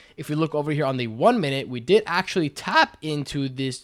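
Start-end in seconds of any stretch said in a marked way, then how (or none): 1.7-3.8 voice cracking and breaking, drawn out. Reviewing a trading strategy's results on a chart; voice cracking. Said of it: "voice crack".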